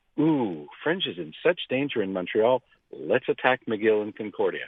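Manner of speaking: ordinary talk, nothing marked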